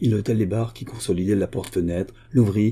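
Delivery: ordinary delivery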